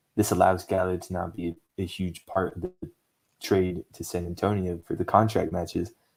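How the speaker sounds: ordinary talk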